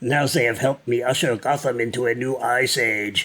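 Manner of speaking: put-on German accent. Quoting a line from the page: Schwarzenegger German accent. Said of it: "That's the only German accent I can do".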